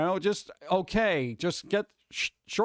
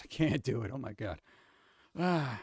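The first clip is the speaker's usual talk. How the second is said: usual speaking voice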